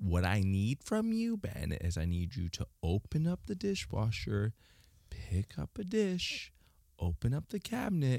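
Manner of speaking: condescending, patronizing, soft, sing-song nagging tone. Asked by the other speaker to imitate their micromanaging voice: mock micromanaging voice. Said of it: "could you imitate the micromanaging voice that I do".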